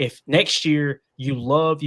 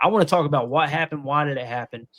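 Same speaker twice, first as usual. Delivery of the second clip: ordinary talk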